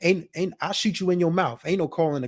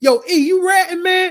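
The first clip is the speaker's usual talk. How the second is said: very loud, shrill, high-pitched yell; 14 semitones higher, 8 dB louder than usual. Retelling a skit where a character yells at another: imitating Holiday yelling. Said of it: "Holiday just yells out".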